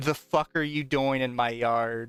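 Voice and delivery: put-on burly old man voice, half-yelled hollering. Telling a story, quoting a massive man who steps out of his truck, loud booming old man voice. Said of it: "loudest booming old man voice you've ever heard".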